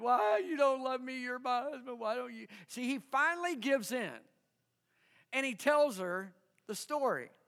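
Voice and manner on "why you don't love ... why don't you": nagging, plaintive, whiny complaining wife voice. Retelling how his wife begged him for the riddle's answer, imitating her whining. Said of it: "she whined and complained and cried".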